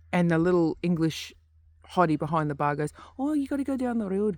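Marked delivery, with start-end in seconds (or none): 3.2-4.3 very high voice with light Scottish lilt. Retelling what the barmaid said to a pub visitor, in a Scottish-sounding accent. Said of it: "sounded a bit Scottish".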